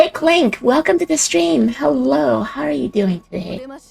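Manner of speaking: raspy, sleepy just-woke-up voice. Greeting a viewer in chat on stream: raspy bed voice. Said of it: "Sorry about the voice".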